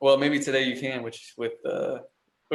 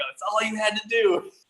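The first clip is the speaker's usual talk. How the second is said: high-pitched, yelled, reproachful scolding tone; 9 semitones higher than usual. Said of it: "yelling at Ruth Bader Ginsburg".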